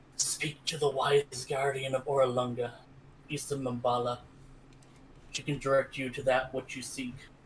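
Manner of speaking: whispering. Game master voices a robed man who stumbles up and collapses, whispering. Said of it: "he whispers".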